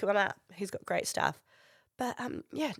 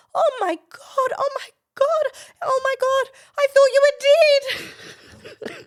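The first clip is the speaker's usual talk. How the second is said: very high, very loud, shrill, drawn-out excited wail; 12 dB louder than usual. Retelling how a woman greeted a friend she thought dead: imitating an excited reunion cry. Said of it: "They were just so excited to see each other".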